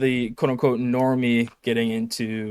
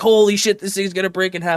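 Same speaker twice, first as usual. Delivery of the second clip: put-on panicked voice, pitched higher; 8 semitones higher, 3 dB louder than usual. Retelling Buckley hearing the Jeep creak: imitating Buckley freaking out. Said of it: "He's just, like, freaking out".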